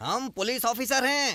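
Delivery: loud, high shouting. Asked who is there, a man answers, shouting. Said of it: "तुम ऐसे चिल्ला क्यों रहे हो?".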